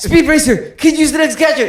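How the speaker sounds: rapid put-on cartoon voice. Imitating the Speed Racer dub, whose hero talked really fast: fast-talking Speed Racer voice. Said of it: "And he talked really fast, like this".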